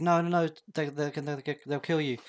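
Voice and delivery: sobbing, tearful, crying, begging and pleading. Retelling a film scene where a character pleads: imitating a character crying.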